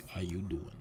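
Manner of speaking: on-air radio announcer delivery. Greeting the audience after moving the mic closer: radio voice. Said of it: "Good radio voice".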